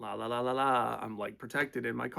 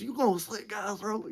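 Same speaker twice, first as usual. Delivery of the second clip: put-on, high-pitched, screamed words; 10 semitones higher than usual. Retelling a stranger who flips out at the speaker: imitating someone screaming. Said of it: "He's just screaming at me".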